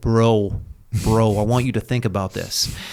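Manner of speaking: put-on heavy bass deep voice. Retelling what another man told him about taking a block, imitating his deep voice. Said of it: "he's that deep voice".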